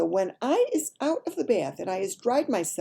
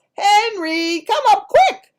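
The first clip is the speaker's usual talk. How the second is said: very high, loud, frantic yell. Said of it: "And she yells".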